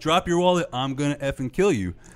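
put-on, loud shouting. Recounting being chased by a man demanding a wallet, retelling a man yelling. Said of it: "He's yelling".

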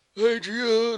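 belted out high-pitched and loud. Showing how a Stallone impression in the film went: Sylvester Stallone impression. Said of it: "I didn't like that impression".

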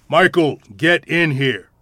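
most authoritative voice, loud and slow. Narrator hurries downstairs at night and calls michael in, most authoritative voice. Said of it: "We will say in our most authoritative voice".

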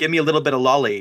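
swaggering, cocky, smug, self-assured delivery. Imitating a boy asking a witch for money: imitating a cocky demand. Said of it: "the most perfect cocky way where he's like".

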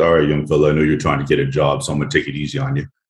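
put-on, big, low, dropped bass voice. Retelling what an opponent in a 5-on-5 game said: imitating a deep voice. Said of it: "this guy in this deep voice goes".

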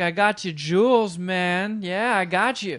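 slow, drawn-out drawling character voice. Talking about a movie, the speaker does a slow drawl as Adam Sandler's Howard. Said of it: "He talks kind of slower like this".

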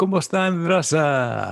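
vampire-style voice with raza drawn out. A co-host, just introduced, greets the audience: Count Dracula voice. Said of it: "Mr. Count Dracula over there".

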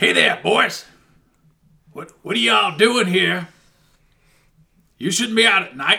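rough-voiced, gruff shout. A voice calls out to the boys from the shadows around the war memorial: gruff shouting voice. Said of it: "a gruff voice uh, speaks out, shouts out at you".

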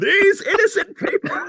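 very high, swooping put-on voice. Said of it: "the Bane voice".

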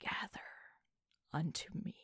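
smallest, lowest, very soft whispered voice. Narrator voices a voice in a player character's mind, smallest, lowest whisper. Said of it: "the smallest, lowest voice, and it whispers".

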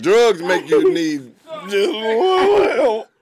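high, loud, slow mock crying wail. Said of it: "They start crying".

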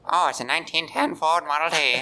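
put-on old-timey 1920s voice. Asked by others for the 1920s impression, speaker does 1920s impression voice. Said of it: "Do like your 1920s impression".

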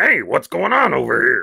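rough, bouncy, loud, swooping puppet character voice. Comparing a voice to the stereotypical nameless Muppet, generic Muppet voice. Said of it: "it sounds like the stereotypical Muppet who doesn't really have a name".

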